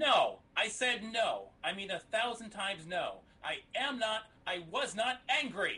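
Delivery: angry, insistent, high-pitched voice. Denying being angry under repeated questioning: sounding angry. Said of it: "because you sound a little".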